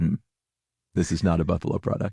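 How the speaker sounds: play-acted, very stern, severe, dead-serious tone. Imagining a newspaper editor rejecting the comic: imitating a stern editor. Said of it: "very sternly".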